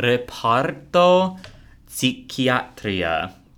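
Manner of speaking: put-on spoken with an Italian accent. Urged by the other speaker, reading a building sign in an Italian accent. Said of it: "I have to use an Italian accent".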